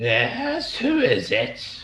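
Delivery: very high, swooping, wicked evil crone voice. The game master voices a creature peering around the door at the players, in an old evil hag voice. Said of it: "that sounds like an old evil hag".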